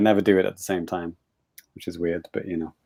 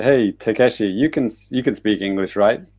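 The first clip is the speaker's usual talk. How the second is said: ordinary delivery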